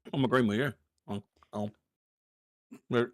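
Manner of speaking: talking with mouth full. A show host talks to the co-hosts while eating, talking with mouth full. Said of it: "Don't talk with your mouth full".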